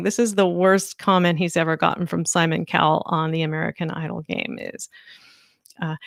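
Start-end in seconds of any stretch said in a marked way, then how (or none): none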